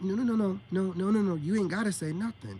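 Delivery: ordinary talk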